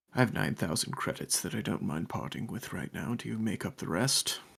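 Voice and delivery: quick, hushed half-whisper. Leaning in for a quick sidebar with another character: half-whispering. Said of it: "I whisper, I whisper to you".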